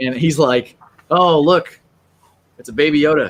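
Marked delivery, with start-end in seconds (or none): 1.1-3.3 utterly deadpan, completely expressionless. Retelling a George Lucas impersonator's trailer review: deadpan George Lucas impression. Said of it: "just so deadpan".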